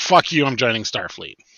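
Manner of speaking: ordinary talk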